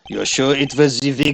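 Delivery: plain reading voice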